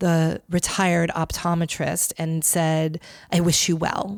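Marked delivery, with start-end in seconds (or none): 3.3-4.2 whispered voice. Retelling how Gwyneth leaned over to the retired optometrist: imitating Gwyneth whispering. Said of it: "she whispered to him".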